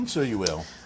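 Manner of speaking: knowing, pointed, insinuating tone with an edge. Replying to another speaker who says they will be working: pointed tone. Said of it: "your tone sounds a bit pointed".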